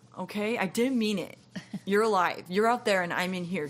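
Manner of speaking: self-absorbed, self-pitying, brushing-off voice. Speaker describing how narcissists talk, narcissist impression. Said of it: "That was my impression of one".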